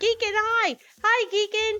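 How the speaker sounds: very high, squeaky, drawn-out shout. Greeting a viewer on stream by name: shouting and squeaky. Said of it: "I'm starting to shout. I'm getting squeaky".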